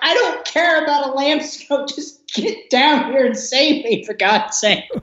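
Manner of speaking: high, mock exasperated pleading tone. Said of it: "you're just like".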